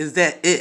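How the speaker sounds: loud, mean, nasty tone. Describing concentration interrupted by someone, imitating a nasty voice. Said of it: "in a nasty voice".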